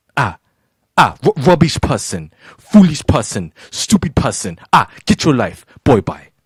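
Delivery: Nigerian English accent, put on. Reacting to something they do not understand, in a put-on Nigerian accent. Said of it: "you make me bring my, my Nigerian accent for this one".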